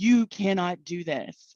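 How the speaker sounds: huge, booming, echoing angel voice. Retelling what an angel told the speaker, in a huge echoing angel voice. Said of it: "in this huge voice that like echoed".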